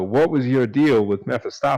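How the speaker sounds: measured, held-in-check tone. Narrating a voice speaking from behind the listener's character, quiet and controlled. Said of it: "a fairly quiet but um, controlled".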